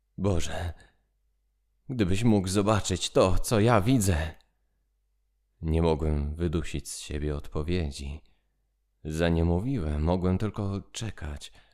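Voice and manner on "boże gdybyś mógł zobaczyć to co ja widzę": trembling, shaky whisper, higher pitch. A man calls up from underground to his friend, in a trembling whisper. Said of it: "wołał teraz pod ziemi drżącym szeptem".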